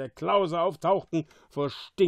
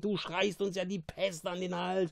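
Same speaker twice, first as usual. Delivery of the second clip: quiet, sharp hiss under the breath; 4 semitones higher, 6 dB quieter than usual. Narrator reads a character answering a shouting companion, hissing. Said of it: "zischte Caliban".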